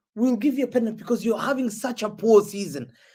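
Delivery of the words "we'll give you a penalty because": plain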